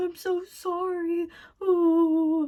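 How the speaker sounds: very high, very slow, drawn-out, tearful wail. Retelling how a partner's denial turned into an apology: imitating someone crying. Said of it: "crying and being like".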